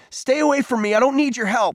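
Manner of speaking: screaming outburst, shrill and very high-pitched. Peter, having shoved Cole to the ground, screams at him: screaming. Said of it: "he screamed".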